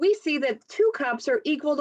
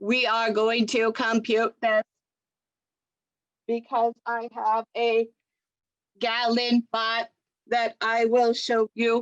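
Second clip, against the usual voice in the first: robotic voice, slower pace; 4 semitones lower than usual. Addressing the class about a gallon bot, in a robot voice. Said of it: "My impression of a robot".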